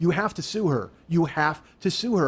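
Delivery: normal talking voice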